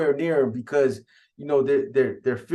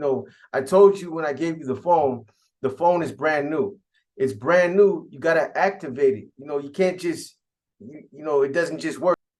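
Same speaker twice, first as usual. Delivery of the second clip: normal talking voice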